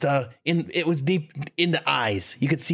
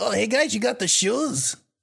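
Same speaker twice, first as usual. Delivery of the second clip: put-on New York accent, much higher pitched; 8 semitones higher than usual. Recalling how the vagrant character sounded, in a slightly higher New York accent. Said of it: "a slightly higher New York accent".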